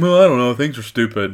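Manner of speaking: mocking, gloomy, negative-sounding voice. Teasing the other speaker by imitating his gloomy answer: imitating the listener's negativity. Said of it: "And you're just like".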